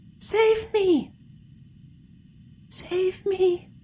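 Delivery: whispering doll voice. Narrating a game scene, voice the doll the player picks up: doll's whisper. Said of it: "it whispers".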